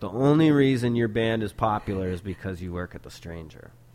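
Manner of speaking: ordinary talk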